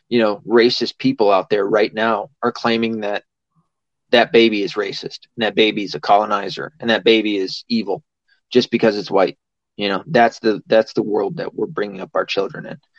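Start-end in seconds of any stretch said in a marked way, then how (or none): none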